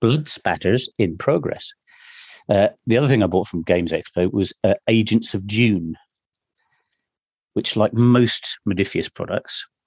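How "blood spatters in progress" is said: put-on monotone female computer voice, too calm. Joining in imitating the sci-fi game computer voice: imitating a monotone female computer voice. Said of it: "That too calm voice".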